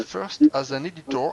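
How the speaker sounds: very strong, slow, wide English accent.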